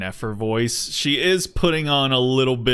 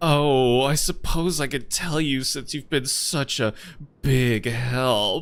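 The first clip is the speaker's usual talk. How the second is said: mock seductive, flirtatious delivery; 2 semitones higher than usual. Imitating a character draping her arms on someone: imitating a flirtatious character. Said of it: "draping her arms onto his chest, being like".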